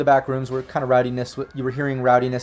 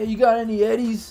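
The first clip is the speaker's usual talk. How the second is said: very high-pitched, yelled-out hollering; 9 semitones higher than usual. Voicing a homeless man who comes out from behind the dumpsters at the group: hollering. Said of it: "he's just like hollering at you guys".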